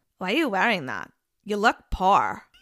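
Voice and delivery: put-on, crazy, weird German-Russian accent. Speaker quoting Anna from a show, in Anna's German-Russian accent. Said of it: "I think I nailed that accent".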